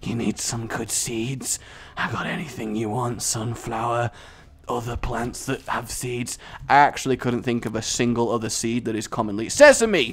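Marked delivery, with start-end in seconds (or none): 0.0-6.4 very creepy farmer voice, soft. Talking about seeds, the speaker slips into a creepy farmer voice. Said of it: "That sounds like the world's creepiest farmer".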